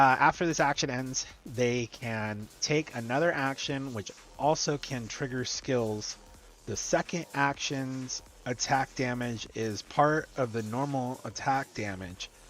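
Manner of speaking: slow, deliberate, drawn-out reading, word by word. Reading a skill description aloud: reading slowly on purpose. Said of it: "I'm reading it slowly on purpose".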